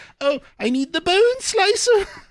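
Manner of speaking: very high, squeaky, cracking voice, rising pitch. Recalling 4 a.m. after six hours, asking for the bone slicer: very squeaky voice with crack. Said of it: "in a very squeaky voice with a voice crack".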